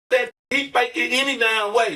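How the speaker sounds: put-on talking while laughing. Retelling what two girls said about the faked seizure: imitating girls laughing while talking. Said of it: "These two girls laughing like".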